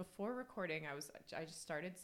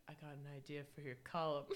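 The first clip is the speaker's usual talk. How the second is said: silly, dumb put-on seductive voice, small and sexy; 3 semitones lower than usual. Retelling a TV scene where Big comes up to her: Big's stupid little sexy voice. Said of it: "in his like stupid little sexy voice".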